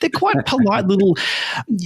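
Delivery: ordinary delivery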